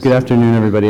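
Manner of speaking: projecting presenter voice.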